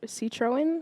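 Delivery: "Citroen" said with a questioning rising tune.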